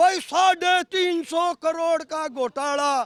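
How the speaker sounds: put-on stop-start, halting, punchy campaign-speech accent. Quoting a clip of a man who contested an election, mimicking his accent. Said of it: "मैं उसी के एसेंट में बोल देता हूं".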